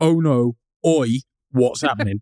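put-on Cockney accent. Retelling a background character's line from a film, cockney accent. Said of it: "They've actually landed in a Cockney planet".

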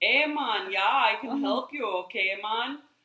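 put-on speaking with a Jamaican accent. Retelling how a lady answered callers with Jamaican accents: put-on Jamaican accent. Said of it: "if somebody called and they had a Jamaican accent, she would say".

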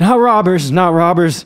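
frightened, terrified gasping. A terrified man answers the peddler's question, gasping in terror. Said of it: "gasped the terrified man".

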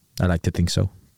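low, flat deadpan delivery. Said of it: "no banter, Mesut Ozil, deadpan".

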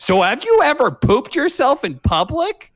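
very high, sing-song, swooping put-on character voice. Retelling how Joey comes on despite pleas to say nothing stupid, in a Joey voice like a Sayori voice. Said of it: "Why does your Joey voice sound like your Sayori voice?".

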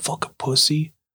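hushed whisper under the breath. Showing how you'd say it in front of friends' parents: whisper. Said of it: "You might whisper it like".

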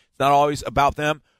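normal talking voice

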